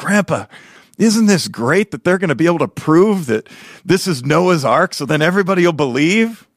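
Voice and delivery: acted-out eager, all-worked-up, excited, high-pitched. Retelling asking grandpa about the ark documentary: imitating own excited younger self. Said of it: "I'm getting all excited".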